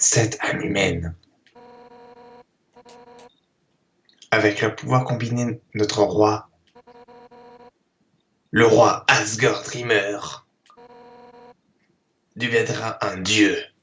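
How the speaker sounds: performed game-character voice with swooping pitch. Playing a game, invited to do the voice, doing the game character's voice. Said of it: "si tu veux faire la voix".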